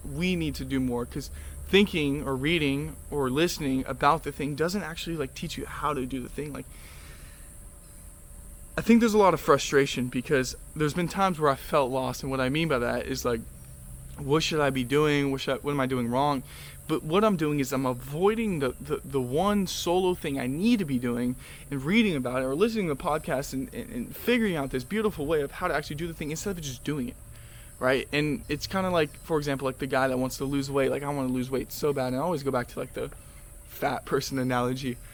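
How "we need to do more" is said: the word we stressed, pushed up front. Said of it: "You need to do more".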